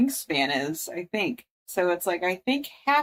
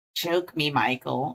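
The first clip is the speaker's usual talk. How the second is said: clumsy, badly done eel creature voice; 4 semitones lower than usual. Quoting what the eel says: bad eel voice. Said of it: "me doing bad voices as usual".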